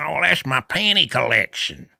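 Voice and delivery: put-on high, creaky, rough old man drawl, matter-of-fact. Retelling a cop-show arrest, voicing the old man Russell: imitating Russell's old-guy voice. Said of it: "he was an old guy talk like this".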